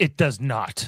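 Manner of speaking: put-on very definitive voice. Retelling a refusal to be cheered up: imitating Spock, very definitive. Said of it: "very definitively".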